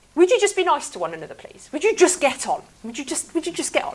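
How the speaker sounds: at-wits'-end pleading, very high-pitched and swooping. Imagining the voice behind a written text, imitating an exasperated parent. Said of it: "I kind of almost hear a parental voice there going".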